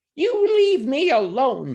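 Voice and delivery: very high, shrill, scared goblin squeal. Narrator voicing a frightened little goblin speaking to a man, squealing. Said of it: "he squealed".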